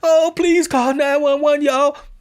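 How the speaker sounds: mock very high, loud crocodile-tears wail, fake sobbing. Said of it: "the dude was fake crying".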